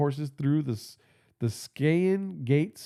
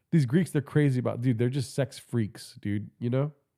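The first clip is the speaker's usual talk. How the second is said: normal talking voice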